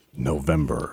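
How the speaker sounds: formal, official-sounding announcement voice. Announcing that it is now the month, in an official-sounding voice. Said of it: "I had to do that in like an official voice".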